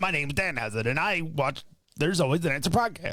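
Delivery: very evil character voice. Imitating Danhausen in a personalized video for the podcast: Danhausen impression. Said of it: "Was that a good impression?".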